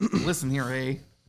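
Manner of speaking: put-on Canadian accent. Joking about a disappointing Canadian anime character: mock Canadian accent. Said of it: "The Canadian".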